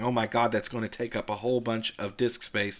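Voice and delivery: ordinary talk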